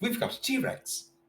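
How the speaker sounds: slow, hushed, breathed-out delivery. Quoting a movie line about a T-Rex, imitating the guy from Jurassic Park. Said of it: "You have to say it like the guy from the original".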